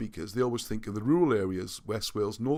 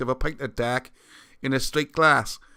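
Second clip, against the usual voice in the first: talking like someone from Cardiff; 6 dB louder than usual. Showing how a man in Cardiff talks about a pint, in a Cardiff accent. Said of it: "In Cardiff, right, he talks like this".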